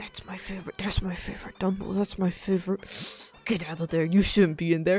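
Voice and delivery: put-on grumbling under breath. Speaker imitates a woman waiting for her favorite Dumbo ride: imitating grumbling under breath. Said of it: "grumbling and swearing under her breath".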